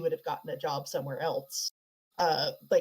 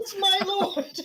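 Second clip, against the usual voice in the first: very high, loud, top-of-lungs cheering scream; 6 dB louder than usual. Retelling how a woman on her feet screamed, retelling a top-of-lungs scream. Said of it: "Just at the top of her lungs".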